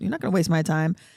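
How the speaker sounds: ordinary talk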